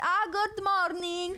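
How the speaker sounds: very high, put-on Italian accent. Retelling a morning greeting to a man: imitating own italian accent. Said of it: "I did the accent, but not the words".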